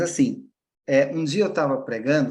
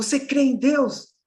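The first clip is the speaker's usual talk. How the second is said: very high, hollered yell, acted out; 12 semitones higher than usual. Recounting how a young man shouted in the middle of church, retelling a man's yell. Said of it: "lá no meio da igreja começou a gritar".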